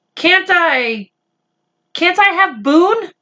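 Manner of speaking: small voice. Reading a story aloud, one character asks another a question: small voice. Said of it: "in a small voice".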